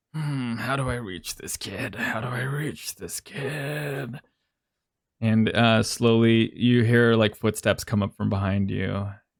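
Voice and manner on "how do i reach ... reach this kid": put-on soft, slow self-talk mutter with kid drawn out. Narrating a game scene, the speaker voices Dr. Ashwood muttering to himself. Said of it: "like muttering to himself".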